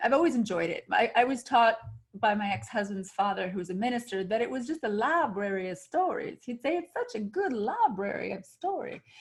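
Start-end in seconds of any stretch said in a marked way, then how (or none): 6.8-9.0 put-on heavy twangy Southern American accent. Quoting the speaker's ex-husband's father, a minister, in his southern twang. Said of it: "in his southern twang".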